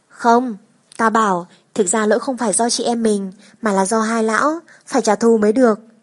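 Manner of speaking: ordinary delivery, nothing marked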